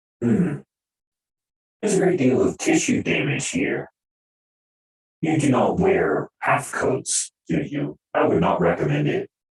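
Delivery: low, loud, heavily modulated machine drone voice. Voicing Cobble examining a wounded back: drone voice mod. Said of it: "the drone voice mod is a little too modulated".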